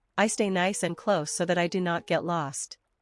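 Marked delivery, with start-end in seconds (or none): none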